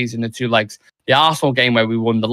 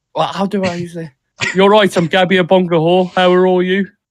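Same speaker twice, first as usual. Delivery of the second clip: Birmingham Brummie accent, pitched up; 6 semitones higher than usual. Showing a listener who has never heard one, speaking in a Brummie accent. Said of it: "I'm going to do this in a Brummie accent".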